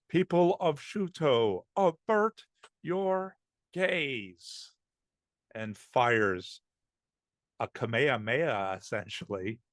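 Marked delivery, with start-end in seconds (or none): 0.1-4.7 very high, drawn-out, booming voice. Speaker voicing a character calling out to the people of shuto, booming voice. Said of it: "He calls out in a booming voice, like a mage's decree".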